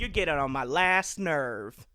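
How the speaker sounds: loud, very slow, sassy voice with attitude. Speaker riffs on how a lake's name sounds: imitating a sassy woman. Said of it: "sounds like the type of person that'd be like".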